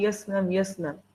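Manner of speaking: quick, soft, mocking, mumbled rush. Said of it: "you are speaking so fast".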